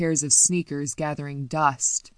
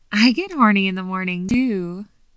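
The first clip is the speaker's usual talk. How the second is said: cooing, higher and louder; 4 semitones higher, 4 dB louder than usual. A woman speaks to the narrator the morning after a night together: cooed. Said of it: "she cooed".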